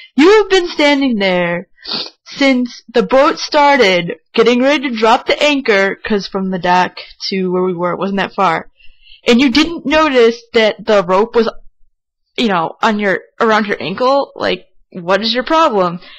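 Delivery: very angry, harsh, scolding lecture tone.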